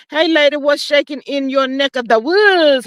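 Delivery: ordinary delivery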